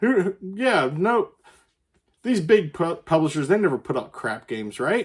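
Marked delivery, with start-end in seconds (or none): 2.2-5.1 mock-sincere, ironic, sarcastic, swooping sing-song. Discussing upcoming games, sarcastic. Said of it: "I'm being sarcastic when I say this".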